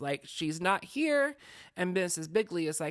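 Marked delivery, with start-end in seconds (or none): 0.2-1.4 high, slow, exasperated sighing delivery. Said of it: "comes back somewhat exasperated".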